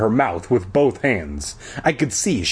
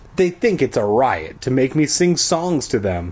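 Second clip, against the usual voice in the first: ordinary delivery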